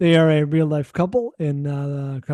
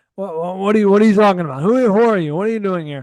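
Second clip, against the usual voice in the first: put-on loud, halting, stumbling, repeated shouts; 4 semitones higher, 5 dB louder than usual. Retelling a scene from the film of him arguing with the mirror: imitating someone yelling. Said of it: "yelling at it and being like".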